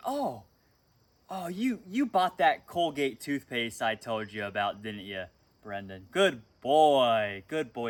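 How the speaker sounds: put-on acted doting sing-song, loud, swooping, "boy" drawn out. Acting out how she will praise him at the appointment: imitating someone praising. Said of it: "she's gonna be like".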